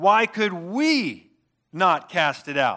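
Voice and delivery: heavy emphasis placed on the word "we". Reading a Bible verse aloud, with stress on the word we. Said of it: "you need to hear the emphasis on the word "we."".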